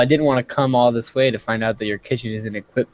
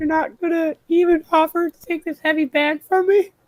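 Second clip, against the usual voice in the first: put-on voice pushed very high-pitched. Playing a bit after being urged to, in a high-pitched voice. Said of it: "do a high pitched voice".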